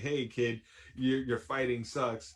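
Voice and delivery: ordinary talk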